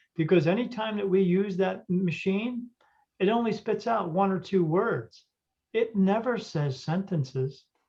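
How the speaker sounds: ordinary talk, nothing marked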